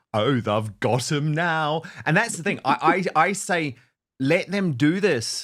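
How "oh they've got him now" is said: joking, tongue-in-cheek.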